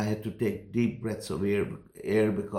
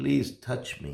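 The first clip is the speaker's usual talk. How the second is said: earnest, begging, pleading tone; 3 semitones higher than usual. Retelling how a sick man begged to be touched: imitating someone begging. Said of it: "he begged me".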